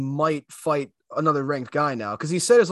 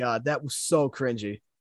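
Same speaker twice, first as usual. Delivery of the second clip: plain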